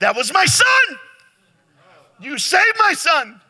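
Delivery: very high, very loud, rising all-out scream. Retelling a five-star general hugging a nurse's ankles: imitating a scream at full volume. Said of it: "screaming to the top of his lungs".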